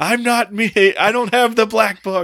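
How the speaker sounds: very high, shrill, loud scream from a distance. Recounting a movie scene, the speaker quotes an actor screaming from fifteen feet away: retelling a scream. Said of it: "15 feet away from him screaming".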